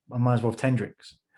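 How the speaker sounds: ordinary delivery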